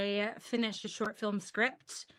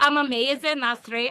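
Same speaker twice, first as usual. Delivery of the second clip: really bad, fake, put-on Glasgow accent; 3 semitones higher, 6 dB louder than usual. Answering a co-host at the start of a podcast recording, in a really bad glasgow accent. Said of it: "in a really shite Glasgow accent".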